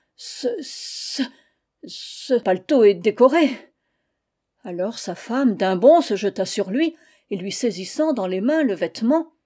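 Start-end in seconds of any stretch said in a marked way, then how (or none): 0.2-3.5 stunned, very slow, halting stammer. A man finding a red ribbon on his overcoat, stammering. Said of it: "Il balbutia".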